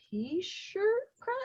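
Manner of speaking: sheepish, unsure, high and wide-ranging pitch.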